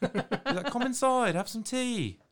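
put-on British accent, pitched very high. Describing a worm in a movie inviting someone in for tea: British accent. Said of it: "That was a really good British accent".

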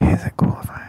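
whispered speech. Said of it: "the mic isn't picking up any of your whispering".

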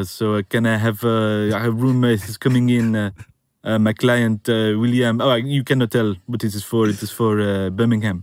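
terrible, worst-possible put-on French accent. Showing the accent once put on as an agent, worst fake French accent. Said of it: "I put on my worst, unrepeatable French accent as an agent. ... it's talking like this".

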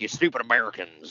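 put-on thick, laid-on Southern accent. Retelling an anti-American promo line in a thick Southern accent. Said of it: "he's got a thick Southern accent".

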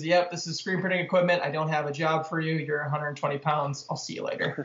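ordinary delivery

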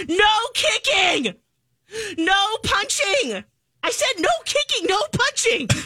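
high, slow, yelling teacher voice. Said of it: "you hear the teacher go".

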